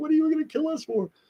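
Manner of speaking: tearful, very high-pitched crying voice. Retelling being threatened and already crying: imitating his own past crying. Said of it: "I'm crying already".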